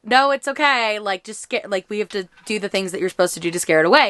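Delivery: normal talking voice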